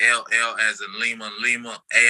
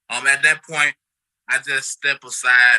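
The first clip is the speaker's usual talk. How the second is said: ordinary talk, nothing marked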